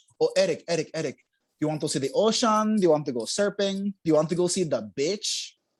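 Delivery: put-on thick Filipino accent. Quoting what his mom would say when he was growing up, imitating mom's thick Filipino accent. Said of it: "She's got a thick Filipino accent".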